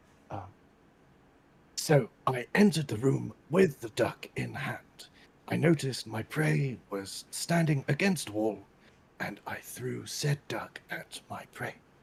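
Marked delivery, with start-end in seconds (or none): 1.8-11.8 nature-documentary narrator voice. Narrating entering a room with a duck, David Attenborough narrator voice. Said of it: "we would like a David Attenborough impression".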